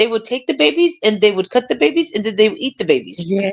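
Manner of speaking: put-on small, dead serious British accent. Retelling what a little girl on a program said: imitating a little girl's British accent. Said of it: "she had her little British accent".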